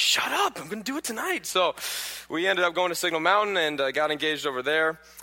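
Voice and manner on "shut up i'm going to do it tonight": high-pitched, exasperated tone. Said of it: "and I'm like".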